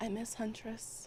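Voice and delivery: very quiet, hushed, barely-there delivery. Voicing a character who leans over to two companions: very quiet. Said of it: "very quietly goes".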